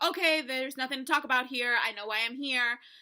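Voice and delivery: acted snide, passive-aggressive, rude sarcastic dismissive tone. Retelling how someone entered the courtroom: imitating Zach being rude and sarcastic. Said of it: "Very rude, very sarcastic, very passive-aggressive".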